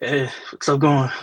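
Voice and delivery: loud, breathless, winded voice. Guest joining a Halloween horror podcast just after running outside, out of breath. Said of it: "out of breath here".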